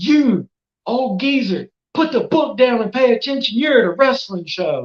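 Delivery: high, shrill, piercing yell. Retelling what a wrestler yelled at a fan in the front row: imitating a wrestler yelling. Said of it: "yelled like a fire drill was going down".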